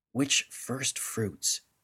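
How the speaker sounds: quiet whispered voice. Narrator reading Bright Sparrow speaking into a dreaming man's ear, whispering. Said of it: "she whispered into his ear".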